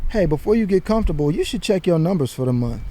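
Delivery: ordinary delivery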